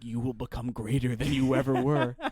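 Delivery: hushed whisper. Acting out a hunter whispering to a deer while killing it: whispering. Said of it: "just whispering into the air".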